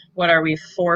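ordinary talk, nothing marked

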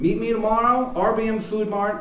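high, loud, bad Baltimore accent. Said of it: "a shitty Baltimore accent".

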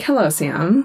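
ordinary talk, nothing marked

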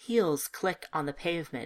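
ordinary delivery, nothing marked

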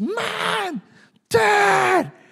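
very high, shrill scream, one word drawn out. Retelling how your daughter suddenly called out to you, imitating Anna screaming. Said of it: "screams at the top of her voice".

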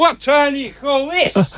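mock very high, drawn-out teasing, joking yell. Retelling walking-in moment, joking to friend at the door: imitating own past yell. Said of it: "I yell".

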